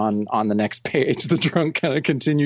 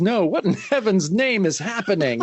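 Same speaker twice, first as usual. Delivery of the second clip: high, terrified, panicked scream of fright; 7 semitones higher than usual. Reading a comic page where a man wakes held by a werewolf, scared screaming. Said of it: "He screams".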